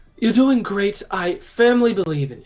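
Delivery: high, shouted, encouraging call. Shouting in character to a climbing companion: shouting encouragement. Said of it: "I'm gonna shout down".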